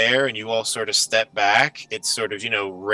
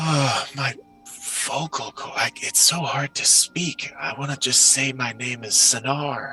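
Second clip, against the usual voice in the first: voice of an ancient risen mummy creature; 4 semitones higher than usual. Voicing the mummy's thoughts as it struggles to speak: voicing a mummy creature. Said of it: "you hear the thoughts of this creature".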